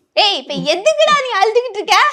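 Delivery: high, laughing, scolding tone with North Indian accent.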